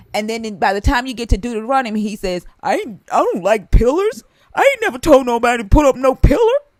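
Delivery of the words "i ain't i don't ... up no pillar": goofy voice, loud and pitched up. Quoting God in Deuteronomy rejecting pillars: God voice. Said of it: "I love your God voice thing".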